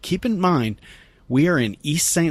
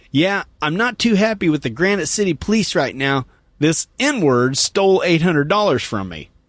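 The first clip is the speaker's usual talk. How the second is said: very loud, booming, carrying voice; 2 semitones higher, 3 dB louder than usual. Retelling what a woman said to the speaker: retelling a very loud voice. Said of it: "in a very loud voice".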